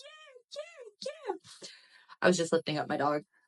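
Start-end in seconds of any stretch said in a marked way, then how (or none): 0.0-1.7 tiny, very high-pitched, soft hushed voice. Podcast host lifting up his dog mid-intro, in a little high-pitched voice. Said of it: "that's why I made the little high pitched voice right there".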